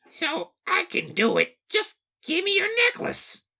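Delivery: very high, small little-man voice. Redoing a friend's impression of a little man in a story, Toad voice. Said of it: "do a better impression of this little man".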